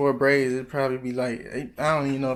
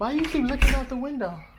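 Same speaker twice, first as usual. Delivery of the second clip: very high-pitched put-on voice; 12 semitones higher than usual. Imagining his girlfriend's question while he waits for a package, imitating his girlfriend. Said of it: "I can hear my girl voice".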